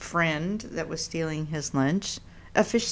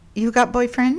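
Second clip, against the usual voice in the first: put-on high, raised voice with broken-English foreign accent; 7 semitones higher, 6 dB louder than usual. Recalling the manicurist, the speaker quotes her question, imitating the manicurist lady. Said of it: "she was the lady that said".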